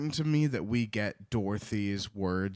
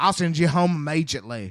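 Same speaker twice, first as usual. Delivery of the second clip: very loud, high Irish-sounding phonetic dialect; 6 semitones higher, 8 dB louder than usual. Reading Dorothy's phonetically spelled dialect line aloud: reading Dorothy's phonetic dialect. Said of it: "that doesn't sound like Southern".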